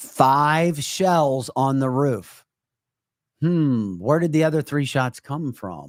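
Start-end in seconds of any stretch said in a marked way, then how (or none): 0.0-2.4 every word stretched as slow as possible. Repeating a point to Eric so he can follow it, as slowly as possible. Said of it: "I'll say this as slow as I possibly can".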